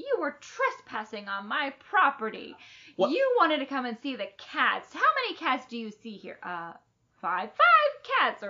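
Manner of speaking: loud, angry hag voice. Speaker retelling Mrs. Rosini giving Annie a tongue lashing, mock scolding. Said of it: "giving Annie a tongue lashing".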